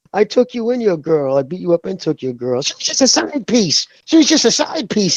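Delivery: mock all-out yelling rant, shrill and high-pitched. Retelling how Malignaggi yelled at a rival: imitating Malignaggi yelling. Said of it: "he's yelling".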